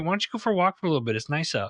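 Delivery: mock caring, gentle, tender, loving tone. Speaker quotes how she calls him out kindly, imitating a loving tone. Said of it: "she says it in such a loving way".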